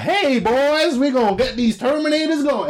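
very high, dumb-sounding voice. Describing an advert where the army general turns out to be Arnold Schwarzenegger, doing his dumb voice. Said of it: "he's got some dumb voice".

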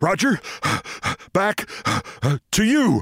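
breathless, panting voice. Retelling an anchor ending a shouted segment: imitating Ted Dawson panting. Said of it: "and panting".

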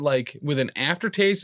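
normal talking voice

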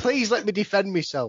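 mock pleading tone. Asking the others for a chance to defend a list pick: mock pleading. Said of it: "I sound like I'm being put up for something really bad".

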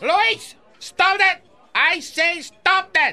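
shouting. In a scene, a character yells at Luis to stop. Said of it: "wouldn't raise your voice so much".

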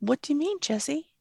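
put-on upbeat cheery voice. Retelling a talk with Jesse, the speaker quotes their own put-on cheery voice. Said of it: "in a cheery voice".

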